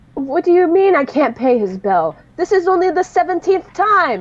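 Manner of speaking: grating, loud whine. A game master voices someone overheard in the next room, in an obnoxious voice. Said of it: "a rather obnoxious but familiar voice".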